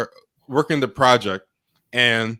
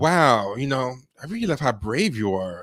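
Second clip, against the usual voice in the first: mock passive-aggressive tone, slower, quieter; 4 dB quieter than usual. Showing how a woman would really phrase it, imitating passive-aggressive praise. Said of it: "passive passive aggressive ... this is how she would say it".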